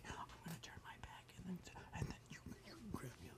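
fast, quiet, calm whisper.

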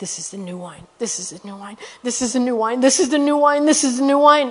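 mimicked whisper. Speaker retells a man repeating the same words to them: imitating someone whispering. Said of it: "he's whispering".

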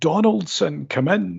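mock high shouted call. Retelling a career advisor calling a pupil in from the queue: imitating someone shouting. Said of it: "And he shouts".

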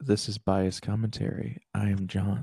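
ASMR-style delivery. Opening the Bias Commentary show and introducing himself, in an ASMR voice. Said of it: "Are we doing the ASMR voice".

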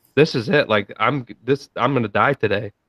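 mock terrified, scared stiff voice. Retelling thinking the plane would crash in a storm: retelling own terrified words. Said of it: "I was so fucking terrified".

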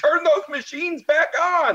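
put-on very high, frantic-pitched shriek. Comparing losing a bet to a scene: imitating Trading Places old man screaming. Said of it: "the old guy that just went bankrupt is screaming".

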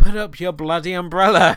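irritated, exasperated yelling, loud and shrill. Recalling a character running in the rain, retelling a scream at the TV. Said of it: "I'm just screaming at the TV".

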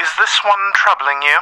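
faintly processed, modulated voice. Narrating a scene to listeners, then voicing a stranger: slightly modulated voice. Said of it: "you just hear a slightly modulated voice".

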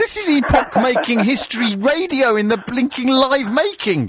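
high-pitched, mock-excited radio-style hype.

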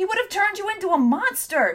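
very high voice swelling into a rising angry shout. Narrator reads Tom answering her, voice rising to an angry shout. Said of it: "Tom heard his own voice rising to a shout".

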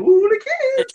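odd cartoon character voice, very high. Describing a cartoon character with a weird voice: imitating a weird cartoon voice. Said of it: "One of them has a weird voice, like".

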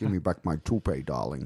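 put-on Scottish movie-star style accent. After talk of a Bond movie, a speaker does a Sean Connery impression. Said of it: "Sean Connery impersonation".

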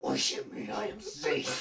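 hushed, breathy, menacing, scary whisper. Following a dare prompt while hugging someone: best scary voice. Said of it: "say in your best scary voice".

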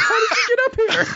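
put-on acted, very high little-girl shriek. A narrator voices the girl as someone's hand lands on her shoulder: screaming. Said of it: "she screams and goes".

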